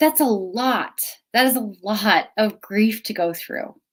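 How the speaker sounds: teary, welling up, close to crying. Speaker talking about the past year's losses, getting teary. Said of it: "And I'm getting teary".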